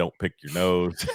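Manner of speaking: plain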